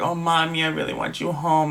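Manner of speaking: put-on weepy, tearful, crying child's pleading voice. Retelling a phone call where a daughter cries to her mother: imitating a crying child. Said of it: "the daughter's crying".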